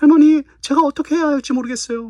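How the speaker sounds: very high, confused-sounding woman's voice. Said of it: "이거 여자 목소리".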